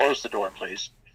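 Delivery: put-on solemn, serious speaking voice. Retelling being asked to close the door: imitating someone speaking solemnly. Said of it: "very solemnly".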